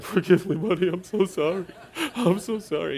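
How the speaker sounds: mock weepy, tearful, crying voice. Retelling apologizing to a son in bed: imitating his own crying. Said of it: "Dad crying in bed, being like".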